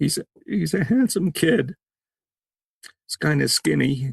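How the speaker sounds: emotional, choked up. Showing a photo of a kid taken three weeks before he passed, emotional, choked up. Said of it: "this is where I'm going to get emotional".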